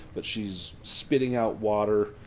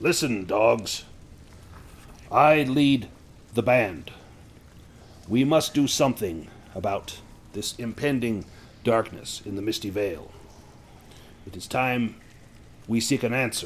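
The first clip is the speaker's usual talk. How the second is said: put-on dark guttural creature voice; 4 dB louder than usual. Game master voicing someone overheard addressing the band; dark, guttural voice. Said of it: "several dark, guttural voices".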